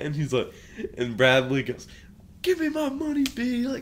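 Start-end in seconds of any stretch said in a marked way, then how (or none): 2.4-3.7 put-on, shrill, very high-pitched scream. Retelling a man demanding his bet money from another man, retelling a scream. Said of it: "he's screaming at him".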